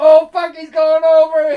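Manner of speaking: startled yelling, high pitch.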